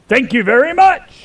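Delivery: mock sudden yell, very high-pitched. Retelling a man in a booth yelling at the speaker passing by: imitating a man yelling. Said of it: "as he yells to me".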